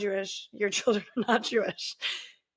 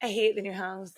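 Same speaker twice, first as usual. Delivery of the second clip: mock deadpan, flat delivery. Speaker quoting what a man said to them, retelling a deadpan line.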